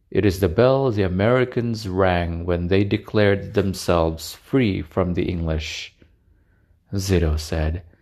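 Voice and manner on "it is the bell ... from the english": plain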